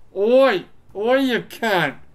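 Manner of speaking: put-on Australian accent. Speaker trying out different voices, attempting an Australian accent. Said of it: "I want to do an Australian accent".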